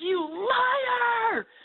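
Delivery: play-acted, very high, angry, drawn-out yell. Speaker recounting what they yelled at a cat, retelling a shout. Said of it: "And I just shouted".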